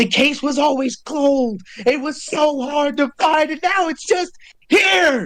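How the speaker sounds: high, agitated, worked-up outburst. Voicing a character reacting to a long-sought creature: Kate agitated. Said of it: "Kate is kinda tweaking".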